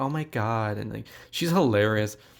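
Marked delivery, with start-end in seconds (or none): 0.0-0.8 put-on girlish Southern accent. Describing a film's cast, quoting a character: Toni Collette as Southern girl. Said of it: "this Southern girl".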